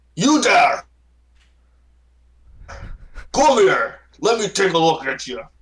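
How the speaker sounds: big booming voice. Narrating a scene, voicing the Baron calling to a player: large booming voice. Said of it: "he says in a very large, booming voice".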